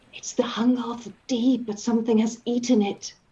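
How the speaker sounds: confiding whisper, very close to the ear. Narrating a game scene, voicing a character who leans close and whispers. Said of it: "she comes close and whispers".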